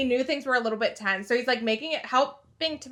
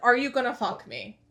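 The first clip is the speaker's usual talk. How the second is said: pushed out on pure breath. Retelling a scene where Shane speaks: imitating Shane's breathy whisper. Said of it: "the most breathy whisper".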